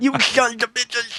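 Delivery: put-on very high, sloppy, slurred, angry outburst. Retelling how a manager slurred while yelling at workers: imitating a slurring angry manager. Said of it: "Fucking ridiculous voice".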